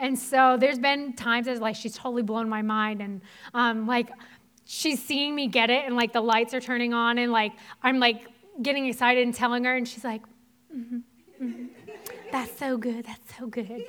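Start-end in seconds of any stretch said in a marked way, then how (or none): 10.8-13.8 put-on sugary, sweet Southern accent. Imitating a counselor's reply: Debbie's sweet Southern accent. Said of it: "you gotta do it in the Debbie voice".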